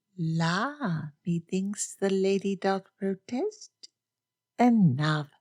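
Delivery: light, lilting, teasing sing-song, "la" drawn out. One character teases another after an indignant denial, in a lilting voice. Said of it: "with a lilting voice said".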